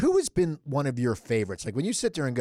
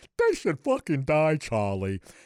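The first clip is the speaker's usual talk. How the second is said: screen actor manner, swooping, sing-song, wide pitch swings; 3 semitones higher than usual. Retelling doing an impression for the actor after an interview: Eric Roberts impression. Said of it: "I gotta do my impression".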